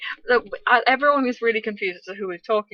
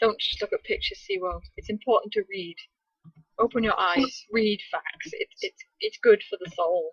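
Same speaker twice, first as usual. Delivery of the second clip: ordinary delivery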